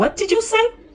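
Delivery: high, loud, shocked outburst.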